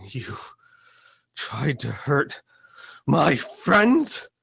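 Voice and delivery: rising, forced out through gritted teeth. Narrator voices Susanna's line to Lucas and Isaac, through gritted teeth. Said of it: "Susanna is talking through gritted teeth".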